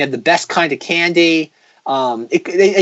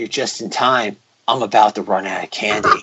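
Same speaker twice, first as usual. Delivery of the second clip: mock very low, grave and solemn voice; 8 semitones lower, 4 dB quieter than usual. Retelling a man with a tub of candy greeting the kids, in a mock-solemn voice. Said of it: "in the most like solemn voice".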